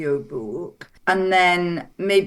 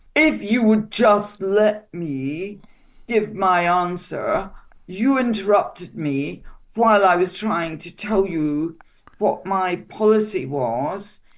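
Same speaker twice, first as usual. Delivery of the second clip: put-on, fake indignant outrage. Imitating a politician cut off by an interviewer, in a mock-outraged tone. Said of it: "a fake outraged tone".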